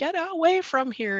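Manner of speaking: high-pitched yelling mother robin bird voice. Describing a mother robin near the basement door: imitating a robin yelling. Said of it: "is always yelling at us".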